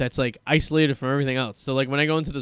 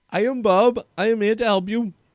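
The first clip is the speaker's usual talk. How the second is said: put-on heavy, thick, laid-on, pitched-up Indian accent; 8 semitones higher than usual. Describing a scam caller, the speaker performs his lines in a thick indian accent. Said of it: "some guy named Bob who has a thick Indian accent".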